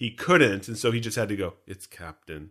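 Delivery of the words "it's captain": mimicked mutter, much quieter and lower. Describing a film scene, the speaker imitates a character who can't get a word in: imitating muttering under breath. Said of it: "he kind of does it under his breath".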